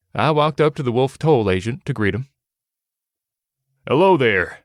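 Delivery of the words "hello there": putting on a very manly voice. Reading a story where the narrator greets a toll agent: manliest voice. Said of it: "I started in my manliest voice".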